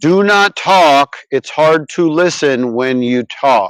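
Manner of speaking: slow, deliberate, word-by-word, drawn-out speech. Arguing with someone who keeps interrupting, slow deliberate speech. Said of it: "Maybe I'll say it slow".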